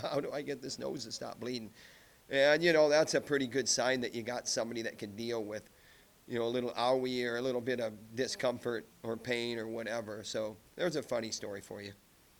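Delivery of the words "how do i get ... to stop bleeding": put-on, amused delivery through a light chuckle. Retelling again how the wrestler asked about his bleeding nose: imitating a chuckling question. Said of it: "a kind of a chuckle, like".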